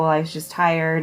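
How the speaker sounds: ordinary talk, nothing marked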